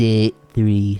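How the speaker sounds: put-on French-accented narrator voice. Announcing the day in a put-on French narrator voice. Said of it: "French narrator voice".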